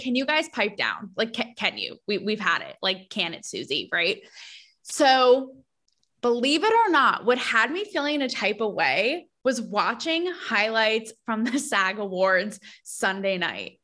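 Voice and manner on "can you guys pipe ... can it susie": mock derisive rant, stammering and tripping over words. Retelling own past words mocking celebrities: retelling own mocking of celebrities. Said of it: "mocking celebrities".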